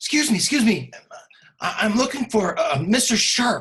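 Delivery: high little halfling voice. Narrating a game scene, the speaker voices a halfling approaching the group: little halfling voice. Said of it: "this little halfling comes up".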